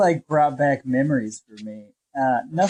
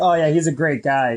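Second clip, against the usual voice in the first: plain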